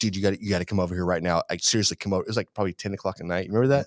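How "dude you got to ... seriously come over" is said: acted-out frantic, urgent pleading. Retelling calling someone late at night, imitating own frantic plea. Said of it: "I was real frantic".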